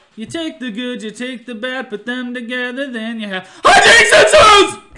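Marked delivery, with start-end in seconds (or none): 3.7-4.8 very loud, very high-pitched shouting. Breaking into the conversation to greet Jason: loud greeting. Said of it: "that was loud".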